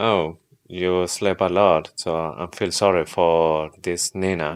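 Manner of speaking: ordinary talk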